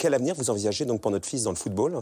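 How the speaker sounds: plain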